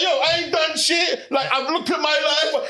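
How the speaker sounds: put-on high, drawn-out, weepy near-sobbing whine. Mocking the other speaker's talk about life: imitating a friend as crying. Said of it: "stop trying to imitate my voice as crying".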